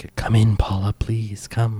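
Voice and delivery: soft, hushed whisper, like a voice on the wind. A game master voices a mysterious voice calling to a player, in a whispering voice. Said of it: "And you hear the whisper again".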